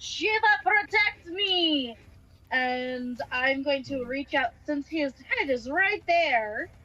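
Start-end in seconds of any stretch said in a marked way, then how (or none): 0.0-2.0 high-pitched, shouted battle yell. A player in a tabletop game speaks in character as a strike comes: yelling. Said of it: "I am yelling".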